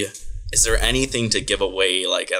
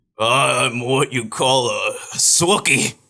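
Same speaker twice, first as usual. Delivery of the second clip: put-on monster voice, higher pitch; 4 semitones higher than usual. Voicing a disguised hairy monster so Harold won't recognize him: Chewbacca voice. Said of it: "I'm gonna change my voice".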